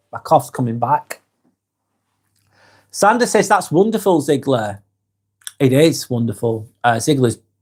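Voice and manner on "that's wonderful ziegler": normal talking voice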